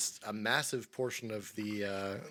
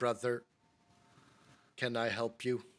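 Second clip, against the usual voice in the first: put-on crackly, scratchy old-record machine voice with vinyl crackle. A narrator voices a servo skull that whirs over to a player, in a scratchy, vinyl-like voice. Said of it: "in a, a scratchy, vinily voice".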